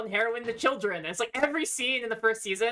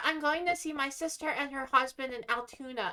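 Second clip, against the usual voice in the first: put-on baby voice, higher-pitched; 3 semitones higher, 4 dB quieter than usual. Showing a favorite character's way of talking: Lucy Moran baby voice. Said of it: "her, like, baby voice".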